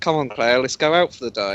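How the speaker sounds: ordinary talk, nothing marked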